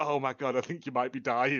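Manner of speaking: put-on pained character voice. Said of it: "you see his eye twitch, and he goes".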